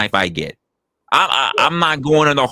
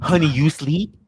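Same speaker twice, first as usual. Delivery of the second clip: mock whispering, higher pitch; 4 semitones higher than usual. Acting out a late-night line to a partner: imitating a whisper. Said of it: "Oh, not the whispering".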